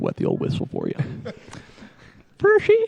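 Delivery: very low, rough, creaky, creepy growl. Asked by a bandmate to say the name in the creepy voice, creepy voice. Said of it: "Can you say it in the creepy voice?".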